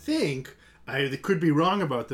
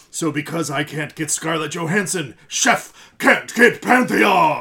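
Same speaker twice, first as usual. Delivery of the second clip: put-on rich, deep movie trailer voice, louder; 10 dB louder than usual. Reading out a comment from Paul Roman in a rich deep voice. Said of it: "I've practiced that voice for Paul".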